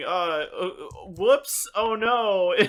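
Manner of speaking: very slow, high, drawn-out, unconvincing half-hearted panic. Imitating a film character who did not seem really panicked: imitating a half-hearted panic. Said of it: "it's almost like she was like".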